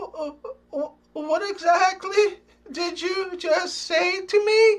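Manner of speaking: small, feeble, high-pitched, stammering voice. Telling a joke, the frightened little guy speaks: small, weak voice. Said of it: "In a small, weak voice".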